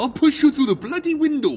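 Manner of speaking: very high, shrill, loud scream. Narrator acting out a man's threat during a fight, screaming. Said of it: "Tim screamed".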